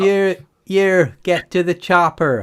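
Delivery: put-on loud, high shout in a Cornish accent. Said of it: "That's all I can hear now".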